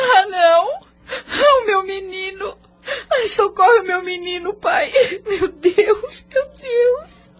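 crying. A woman learns her boy has suffered a collapse, crying. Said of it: "Por que Madalena está chorando?".

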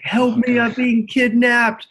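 all-out high-pitched bloodcurdling scream. Game master voicing a man just struck in a tabletop game: screaming bloody murder. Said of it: "he just starts screaming bloody murder".

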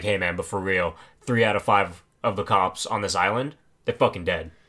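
put-on super serious tone. Retelling a masked guy's warning about the island's cops: imitating a super serious tone. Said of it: "he gets all super serious".

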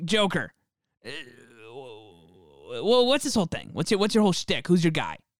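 stammering, stumbling talk-show host voice. Playing an interviewer talking to the Joker: Marc Maron impression. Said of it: "I'm Marc Maron".

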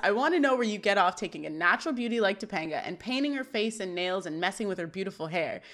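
plain

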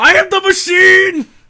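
very high, loud, very slow delivery. Retelling a comedian's bit about meeting the Russian mafia: imitating Bert Kreischer. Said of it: "he goes up to the Russian mafia and goes".

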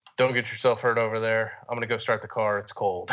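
normal talking voice

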